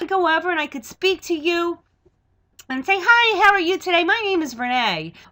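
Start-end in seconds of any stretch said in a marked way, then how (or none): 3.0-5.1 bright, eager, upbeat, enthusiastic voice. Demonstrating tone of voice by greeting someone; enthusiastic tone of voice. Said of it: "your tone of voice".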